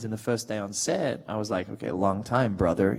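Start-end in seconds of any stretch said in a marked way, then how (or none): 1.7-3.0 put-on American accent, voiced at back of throat. Recalling the first day on set, speaking in an American accent. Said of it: "speaking with an American accent".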